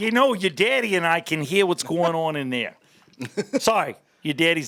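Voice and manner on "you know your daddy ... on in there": put-on Midwestern accent, Minnesota-style mom voice. Asked by another speaker for a Midwestern one, the speaker does a put-on Midwestern mom accent. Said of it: "You gotta give me a Midwestern one".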